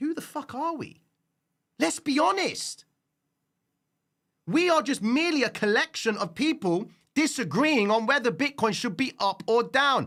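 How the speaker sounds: worked-up, heated outburst, pitched very high. Ranting about Bitcoin to an audience, heated and worked up. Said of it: "I'm just getting a bit heated up about this all".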